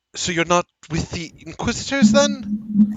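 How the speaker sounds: baffled, rising pitch. Voicing a forest guard questioning the group: very confused. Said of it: "She sounds very confused as she speaks".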